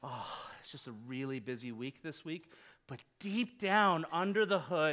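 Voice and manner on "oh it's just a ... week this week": soulful, mournful, lamenting delivery. A pastor showing how he says he's busy, soulful lament. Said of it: "I will say it with a soulful lament".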